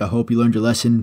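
ordinary delivery

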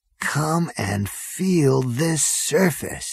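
voice dropped to a soft hush. Narrator reads Zaphod, who has just fallen in love, hushed voice. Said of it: "he said in a hushed voice".

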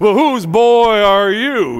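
booming preacher voice. Retelling how a preacher addressed him in front of a room, preacher's big booming voice. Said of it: "his great big booming voice".

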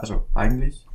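eigentlich emphasized.

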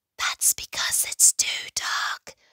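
hushed, breathy whisper. Standing in the dark by the pond with friends, one answers in a whisper. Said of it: "whispered Frog".

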